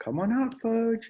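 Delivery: very high-pitched calling voice. Walking down an aisle calling for someone hiding, like calling a dog. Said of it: "I sounded like I was calling a dog".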